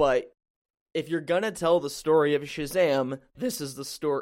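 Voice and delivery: voice breaking, cracking mid-sentence. Answering whether they're excited for the movie, voice cracking. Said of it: "my voice just cracked".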